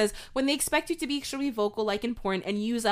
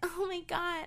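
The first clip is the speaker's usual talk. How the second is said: put-on high, babyish baby-talk voice; 7 semitones higher, 9 dB quieter than usual. Arguing about what a baby voice sounds like: higher baby voice. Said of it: "I thought the baby voice was just like the, ... But it's, like, higher".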